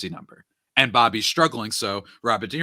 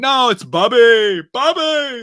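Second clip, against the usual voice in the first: shrill, very high, booming, slow, drawn-out calling; 13 semitones higher, 9 dB louder than usual. Retelling a movie scene about a slumping player: Robert De Niro impression. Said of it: "Robert De Niro, he's like".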